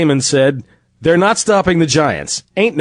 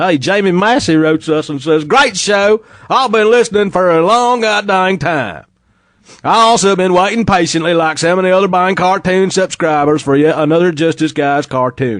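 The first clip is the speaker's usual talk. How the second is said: put-on, slack, rural Tennessee accent; 2 semitones higher than usual. Host reads a listener's letter to the show aloud in a slack Tennessee hick voice. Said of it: "so I'm going to have to read it like that".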